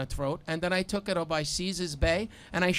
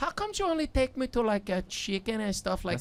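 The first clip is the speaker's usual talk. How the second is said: put-on Spanish accent; 3 semitones higher than usual. Retelling what a woman once asked him, imitating a Spanish accent. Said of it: "sounds like a Spanish chick".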